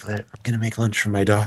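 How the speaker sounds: imitated ASMR whisper. Describing an Instagram dad who makes his kids' lunches, doing his ASMR whisper. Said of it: "does it in a sort of ASMR whisper".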